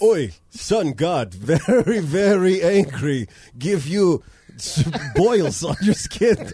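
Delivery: bad Russian accent, drifting in and out. Doing an accent bit as a sun god, the speaker's accent drifts into Russian. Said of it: "now you're going Russian".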